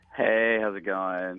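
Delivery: defeated, dejected, sounding beaten. A caller greeting the show's hosts at the start: defeated. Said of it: "You sound so defeated".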